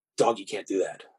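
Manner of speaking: hushed, barely eked-out half-whisper under the breath. Retelling what was said to someone after a mistake: retelling a half-whispered line. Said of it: "eked out a whisper".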